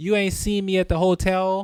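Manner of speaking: put-on Canadian accent. Imitating how Canadians talk in slang: put-on Canadian slang accent. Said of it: "where's this accent coming from?".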